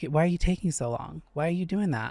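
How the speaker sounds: stern, strict grandmotherly scolding voice. Imitating a coach who watches the sets: imitating a strict coach. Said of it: "she's like that strict grandma".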